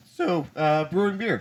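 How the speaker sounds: voice cracking squeakily upward mid-phrase. Changing the subject in a group conversation, the speaker's voice cracks. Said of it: "nice nice voice crack".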